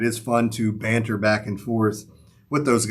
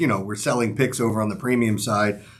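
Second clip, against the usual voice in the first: ordinary delivery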